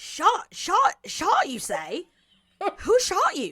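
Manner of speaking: high, loud, swooping Southern drawl. In a comic scene, questioning someone about a bullet wound; Foghorn Leghorn voice. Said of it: "with the accents of Foghorn Leghorn".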